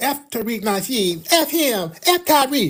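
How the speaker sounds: mock whiny, sassy, high, drawn-out whine. Retelling hearing a stranger curse him, imitating a whining angry man. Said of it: "the dude was whining and crashing out".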